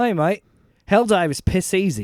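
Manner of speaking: put-on slow, drawn-out Australian accent. Retelling what an Australian teammate said in a game: imitating an Australian accent. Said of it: "this Australian guy that we're playing with, he just goes".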